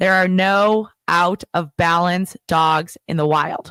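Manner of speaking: slow, deliberate, drawn out word by word. Making a key point to a listener, said slowly. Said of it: "So I'm gonna say this slowly".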